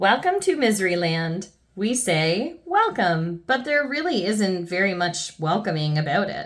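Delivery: ordinary delivery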